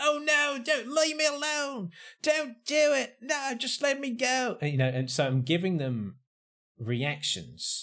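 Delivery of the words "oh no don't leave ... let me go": frantic, panicked yelling at very high pitch. Retelling playing a panicking person in a roleplay: retelling panicked shouting. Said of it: "I'm shouting as well".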